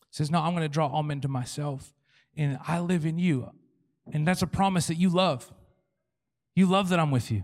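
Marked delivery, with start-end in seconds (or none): none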